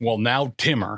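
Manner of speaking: grave, stern, serious fatherly voice. Recalling his dad calling him by name when he was a kid, imitating Bob's serious voice. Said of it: "that's like the serious voice".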